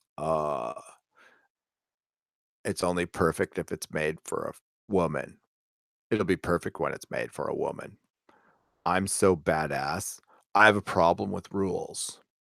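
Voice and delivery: growly voice pushed very low and soft, hushed. Mocking a woman's lines, trying to do her growly voice. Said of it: "let's see if I can do the growly voice".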